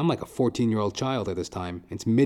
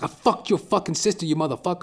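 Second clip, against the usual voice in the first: mock high screaming tantrum meltdown; 9 semitones higher, 3 dB louder than usual. Retelling screaming at his supervisor while throwing a tantrum, retelling a scream. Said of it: "I'm screaming at him and shit".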